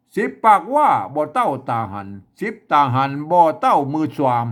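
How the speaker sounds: Chiang Mai northern Thai dialect, sing-song. Demonstrating a regional Thai dialect, in a Chiang Mai Northern Thai accent. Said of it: "อันนี้คือสำเนียงเชียงใหม่ไตยวนนะครับ".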